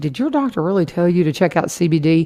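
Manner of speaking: usual speaking voice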